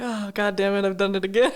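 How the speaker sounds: plain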